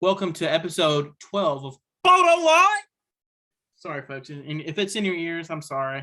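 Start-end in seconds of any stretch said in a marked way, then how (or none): 0.0-2.8 voice dropped low and booming out. Opening episode twelve of the podcast, the host does his Rasheed Wallace impression. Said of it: "I tried to sound a little deeper".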